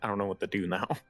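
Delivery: put-on panicked, freaking-out voice. Retelling a moment of not knowing what to do: retelling own freaking out. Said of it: "I was freaking out 'cause I was like".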